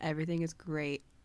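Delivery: flat put-on monotone. Podcaster quoting a favorite episode moment as Joel: flat monotone. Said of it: "in like that same monotone voice".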